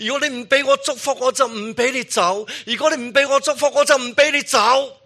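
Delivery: very high, hoarse, tearful crying shout. A storyteller voices a man clinging to a god's feet, hoarse tearful shouting. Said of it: "用沙哑的声音喊着".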